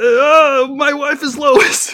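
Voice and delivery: very high cartoon voice, every word stretched out. Asked again for Homer: Homer Simpson voice. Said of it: "and how about Homer?".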